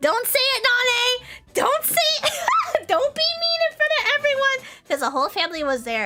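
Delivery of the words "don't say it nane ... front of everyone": mock-angry pleading, higher, louder. Speaker retelling the plea made to mom in front of the whole family, retelling an angry plea. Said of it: "I was so mad".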